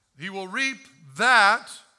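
loud, heavy stress on the word "that".

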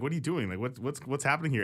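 plain

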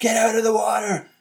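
play-acted, very high shout. Retelling a shark film's plot, the speaker acts out a character's line: retelling a shout.

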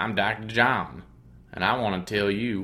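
natural speaking voice, a touch growly. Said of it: "more like when Doctor [name] talks".

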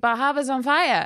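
put-on very thick Boston accent with dropped r's. Retelling how a man on shift repeated his news of a fire, imitating a very thick Boston accent. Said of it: "he had a very thick Boston accent".

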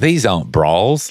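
put-on Australian accent. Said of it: "the Australian accent".

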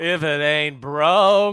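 drawn-out, very slow, loud, preachy sermon-like drawl.

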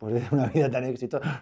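words spoken while laughing. Talking about a successful life, laughing while talking. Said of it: "No sé por qué me estoy riendo".

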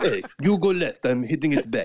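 put-on Russian accent. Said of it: "In that very Russian kind of voice".

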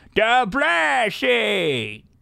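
put-on very high, squeaky, swooping old man voice. Imagining how Adam Sandler will sound at 75, in an old Adam Sandler voice. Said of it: "it's like an Adam Sandler old man thing. That's what he's going to sound like when he's 75. The blessing. Like that".

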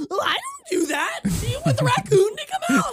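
very high-pitched, defensive, rising pitch. Describing how Jesse reacts when called out, imitating Jesse getting defensive, high-pitched. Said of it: "defensive and sort of like high-pitched".

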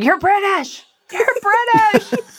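put-on, very high-pitched screaming screech. Retelling yelling at TV actors doing Southern accents: imitating own screaming. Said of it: "and I'm just screaming".

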